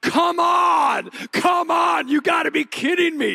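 mock very high, very slow, rasping, drawn-out yell. Speaker recounting watching his team miss, retelling yelling at the TV. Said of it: "I'm like yelling at the TV".

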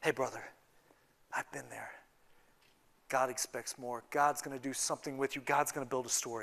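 gentle, low, soft, comforting, consoling voice.

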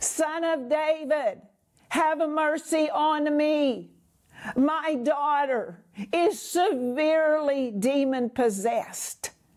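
mock slow, loud pleading cry. Retelling a woman crying out to Jesus for her daughter, retelling a woman crying out. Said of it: "she's crying out to Jesus".

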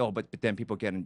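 normal talking voice

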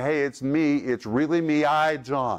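ordinary talk

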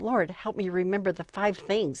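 imitated mumbling under the breath. Retelling a prayer said during a panicked presentation: imitating muttering under breath. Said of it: "under my breath".

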